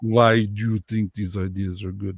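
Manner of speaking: low, fake, put-on Russian accent. Retelling the husband's reaction to crazy ideas, in a mock russian accent. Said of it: "that was my Russian accent".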